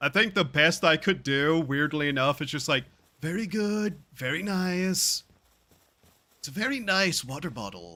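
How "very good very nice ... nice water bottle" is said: showman voice, each "nice" stressed and drawn out. Asked for an impersonation you say you can't do, give an attempted Donald Trump impersonation. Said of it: "Can you do a Donald Trump impersonation?".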